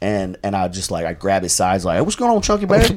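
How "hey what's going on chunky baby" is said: very high-pitched, mocking, teasing jeer. Retelling teasing someone during basketball: imitating own mocking taunts. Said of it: "try to tear him down".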